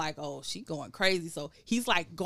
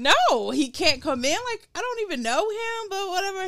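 high, rising, hysterical panicked outburst; 12 semitones higher, 5 dB louder than usual. Recounting a stranger asking to let his friend in, retelling own hysterical refusal. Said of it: "I'm like hysterical".

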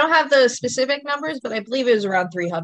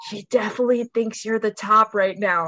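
imitated whispering. Retelling what the other speaker whispered at the bar: imitating someone whispering. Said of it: "you whisper over to me like".

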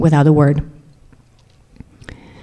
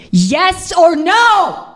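high, slow, furious shout. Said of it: "he shouted".

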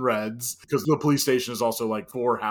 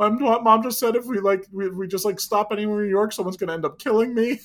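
put-on high, loud, panicked, crying scared child voice. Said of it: "I just started crying".

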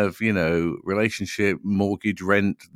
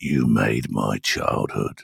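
burly big-guy voice, much lower; 11 semitones lower than usual. Retelling what a great big guy at a DJ set says to them, in a burly voice. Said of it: "say in a burly voice".

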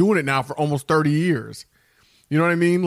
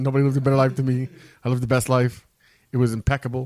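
put-on, big, boastful showman voice; 3 semitones lower than usual. Riffing about having lived the best life, Donald Trump style of talking. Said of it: "Donald Trump style of talking".

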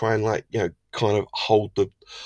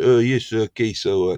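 terrible, exaggerated put-on Italian accent. Imagining Conte on the phone giving orders: terrible Italian accent as Conte. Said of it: "this is a terrible Italian accent".

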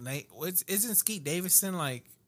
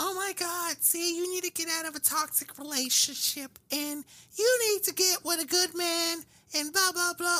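bad, very high-pitched girly voice. Imitating what girls keep saying online: imitating girls in a bad girl voice. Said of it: "you have the worst girl voice I've ever".

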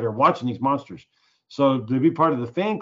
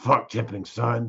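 put-on, mock-rabid ranting voice; 2 semitones lower, 3 dB quieter than usual. Retelling how his dad answers the son asking why he never tips, imitating rabid talk. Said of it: "he's always talking like he's rabid".

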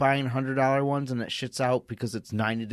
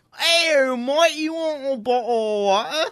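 awful fake English accent, pitched very high; 13 semitones higher, 6 dB louder than usual. Showing off an English accent just called the worst: worst English accent. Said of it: "He has the worst English accent".

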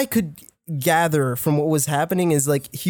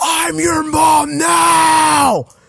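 very high, slow, drawn-out demonic possessed screech; 11 semitones higher, 7 dB louder than usual. Retelling how a friend suddenly screamed in a food court: imitating a loud scream. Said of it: "And she just screams".

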